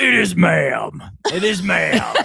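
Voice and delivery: play-acted very slow, loud, rough, angry insistence. Retelling a man getting mad at someone who keeps saying sir: imitating a man getting mad. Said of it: "he's getting mad at somebody in public".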